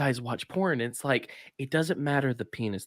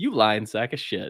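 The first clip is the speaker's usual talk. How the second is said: amused jab said through laughter; 4 dB louder than usual. Retelling reacting to a liar being exposed: retelling own laughing remark. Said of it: "I'm just sitting there laughing like".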